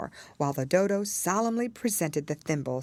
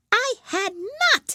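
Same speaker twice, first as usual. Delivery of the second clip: sharp, furious, very high, shrill cry; 6 dB louder than usual. In a read story, a mouse cries out at a girl, sharp and very angry. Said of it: "cried the Mouse sharply and very angrily".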